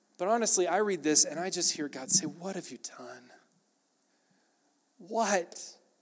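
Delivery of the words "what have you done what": acted grieving voice, soft, close to tears. A speaker voices god questioning his children, imitating a sad, tearful voice. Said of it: "I can hear the tear in his eye".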